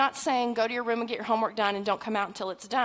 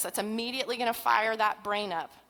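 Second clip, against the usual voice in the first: ordinary delivery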